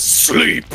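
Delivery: booming voice.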